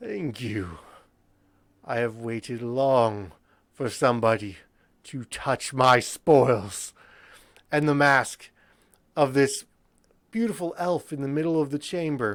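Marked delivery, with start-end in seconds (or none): 0.0-6.9 wicked, laughing villain voice, low and slow. Voicing a wicked figure in a treasure chamber: wicked laughing voice. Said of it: "you hear a wicked laughing emanating".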